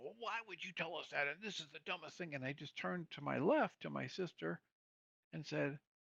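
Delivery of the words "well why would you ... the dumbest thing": mock irate, fast, nonstop angry rant. Retelling how a brother kept railing as family took turns, retelling angry railing. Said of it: "he just kept railing".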